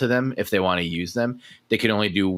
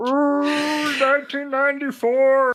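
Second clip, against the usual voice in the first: put-on frog puppet character voice; 3 dB louder than usual. Repeating a year after saying they can impersonate only Kermit: Kermit the Frog voice. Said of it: "properly impersonate Kermit".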